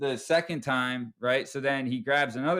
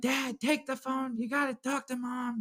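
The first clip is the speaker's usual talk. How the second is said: put-on shrill, very high, urgent shout; 12 semitones higher, 5 dB quieter than usual. Retelling how Alex yelled at his dad to take the phone: imitating Alex yelling. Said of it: "he's yelling at my dad".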